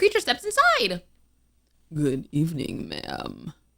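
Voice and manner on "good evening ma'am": low rumbling bass voice, calm and friendly. Reading a story aloud, voicing the werewolf's greeting: low rumbling bass, calm and friendly. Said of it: "A low, rumbling bass, surprisingly calm and friendly".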